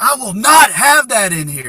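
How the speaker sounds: very loud, high-pitched, commanding yell. Retelling how a man pointed and yelled at the speaker; retelling someone's yell. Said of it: "And he yells at me".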